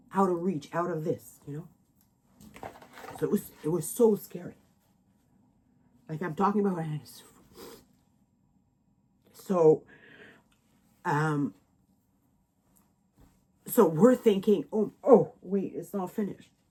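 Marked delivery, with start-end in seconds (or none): 3.2-16.4 tearful voice, crying while speaking. Telling viewers about a scary time their phone went dead, while crying. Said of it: "sorry for crying".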